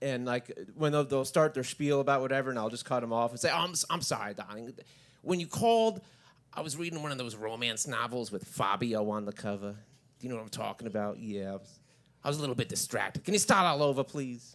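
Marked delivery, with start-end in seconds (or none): 3.5-14.5 put-on sweet woman's voice. Cutting off a caller's spiel in the put-on Linda voice. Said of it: "this other voice named Linda".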